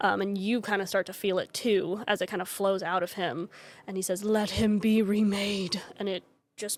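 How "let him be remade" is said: resounding, booming pronouncement. A storyteller voices a man as power flows out of him, in a booming voice. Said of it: "he says in like this booming voice".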